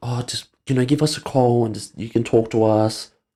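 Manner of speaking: mock sad, sympathetic, put-on voice. Speaker retells how a woman spoke to callers, mock sad sympathetic voice. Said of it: "putting a real sad voice on".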